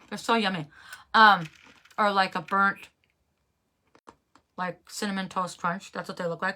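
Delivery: talking with mouth full while eating. Showing a snack to viewers, talking with mouth full. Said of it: "I'm talking with my mouth full".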